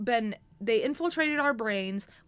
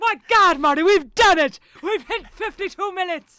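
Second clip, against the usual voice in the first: high, very loud, triumphant mad-scientist cry; 8 semitones higher, 12 dB louder than usual. Checking how long you have been recording, tell Marty in a Doc Brown impression. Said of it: "With the Doc Brown impression".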